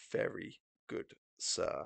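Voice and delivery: close, soft, hushed whisper. Acting out a game enemy who leans over the player, speaking right in your ear. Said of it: "he like leans over you, just in your ear".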